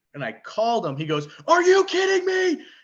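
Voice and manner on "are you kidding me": very high-pitched, shrill, full-volume screaming. Retelling a friend's phone reaction to a win: imitating Chris screaming. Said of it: "he's, like, screaming".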